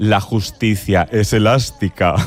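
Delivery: low, wicked, truly nasty villainess voice. Recalling a line from the series Herederos, wicked voice imitating Concha Velasco. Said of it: "decía así con voz de muy mala, malísima".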